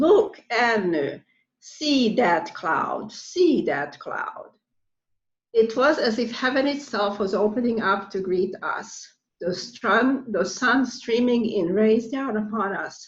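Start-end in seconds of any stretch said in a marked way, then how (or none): 0.0-4.5 put-on heavy Hungarian accent, called out, swooping. Recall Katinka calling out to you before a thunderstorm, in Katinka's thick Hungarian accent. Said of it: "in her thick Hungarian accent".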